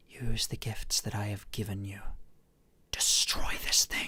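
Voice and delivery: close, breathy whisper right at the ear. Voicing a presence leaning over to a player: whispering in his ear. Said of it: "kind of whispers in your ear".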